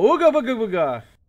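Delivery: very loud, high, spooky boogeyman holler. Retelling how an enemy gave itself away: imitating an enemy's scare cry. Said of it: "he could have totally snuck up on me if he didn't go".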